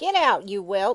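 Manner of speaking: put-on croaky old woman's voice. Narrator reads the old hag ordering a child out, as a croaking old hag. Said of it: "croaked the old hag".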